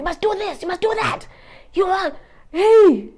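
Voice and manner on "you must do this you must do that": very high, rapid, rattled-off shouting. Mocking personal finance gurus, imitating one shouting at the viewer. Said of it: "I'm shouting at you".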